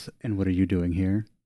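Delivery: soft, low, sweet everyday voice. A narrator voices a woman who walks over to the door: sweet voice. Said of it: "in her in her normal sweet voice says".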